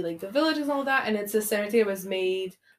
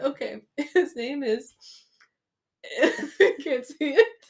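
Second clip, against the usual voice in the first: talking through laughter, higher pitch; 6 semitones higher than usual. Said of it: "Can't breathe".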